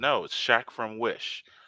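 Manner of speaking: usual speaking voice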